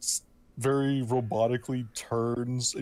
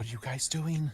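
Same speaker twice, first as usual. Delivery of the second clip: hushed, voiceless half-whisper; 4 dB quieter than usual. Speaking as her character, who moves over to the group, half-whispering. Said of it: "just whispering like".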